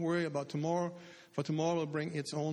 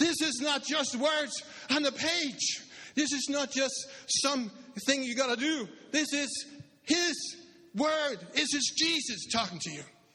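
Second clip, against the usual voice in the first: shrieking, screaming at full cry, very high-pitched; 10 semitones higher, 4 dB louder than usual. Speaking to listeners about scripture, the speaker is screaming. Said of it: "Sorry for screaming".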